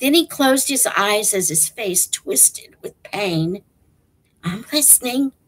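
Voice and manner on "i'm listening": whisper, quieter. Stanley answers Zero, who is in pain, whispering. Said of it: "Stanley whispered".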